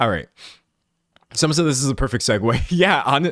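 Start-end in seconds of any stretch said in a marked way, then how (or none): 2.7-3.3 really loud, high, excited burst. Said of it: "Sorry, I'm being really loud".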